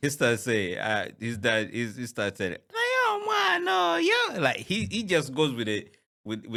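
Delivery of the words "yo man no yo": high, small, tiny voice. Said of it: "that small, tiny voice".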